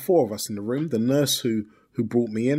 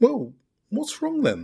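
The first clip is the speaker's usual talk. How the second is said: very high, sing-song, swooping, curious inquisitive voice; 10 semitones higher than usual. Speaker retells taking the bait with a man, retelling an inquisitive question. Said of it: "in the most inquisitive voice I could muster".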